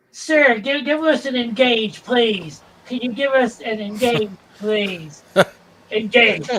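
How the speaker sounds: loud, slow, mocking pleading voice. Retelling how fans at conventions ask Patrick Stewart for a line, mocking fan imitation. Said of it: "he does it in such a mocking voice".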